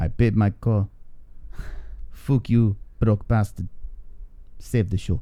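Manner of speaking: put-on Russian barber accent. Quoting a line while imitating his barber: put-on Russian accent. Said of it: "'Cause I'm trying to sound like my barber. My barber's mighty Russian".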